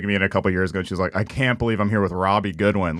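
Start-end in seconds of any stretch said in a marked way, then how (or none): 1.2-3.0 voice full of disgust. Retelling a comedian's remark on a date: imitating a disgusted tone.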